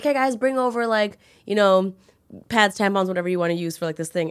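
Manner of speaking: usual speaking voice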